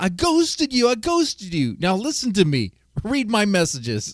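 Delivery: acted, high, frantic, agitated, worked-up outburst. Retelling how someone on a panel reacted: imitating someone flipping out. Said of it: "is flipping out".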